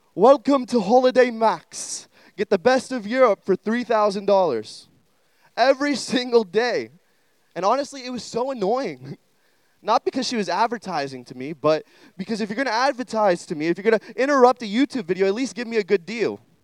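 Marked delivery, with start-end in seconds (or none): 0.2-4.9 put-on British lady accent. Imitating the British lady from a YouTube ad, attempting a British accent. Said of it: "I'm going to try to do a British accent".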